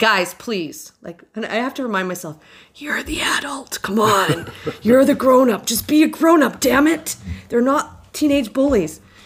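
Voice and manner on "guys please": put-on, mock-assertive voice. Retelling walking up to a group of twelve people, putting on an assertive voice. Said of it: "put on the assertive voice and say".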